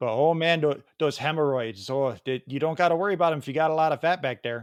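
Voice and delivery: put-on Wisconsin local accent. Speaker shows off a comeback line, done in a Wisconsin accent. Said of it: "I can do the Wisconsin accent pretty well".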